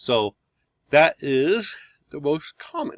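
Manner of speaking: talking through a yawn. Teaching a class about drum heads, yawning while talking. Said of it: "Sorry, I'm yawning".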